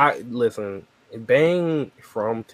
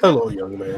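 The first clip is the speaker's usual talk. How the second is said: mock put-on voice, pitched much lower; 2 semitones lower than usual. Telling a story, the speaker answers a man's greeting in his whitest voice. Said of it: "But I put my whitest voice".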